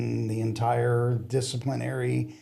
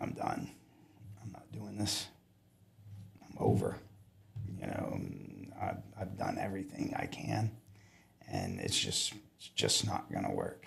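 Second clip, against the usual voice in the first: put-on tearful, breathy near-whisper; 11 dB quieter than usual. Retelling a drive home from work, imitating own tearful voice. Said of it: "and I'm crying, and I'm like".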